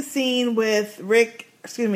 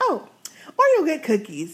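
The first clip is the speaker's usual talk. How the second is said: calm, composed, sing-song tone, pitched up and swooping; 5 semitones higher than usual. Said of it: "she never raised her voice".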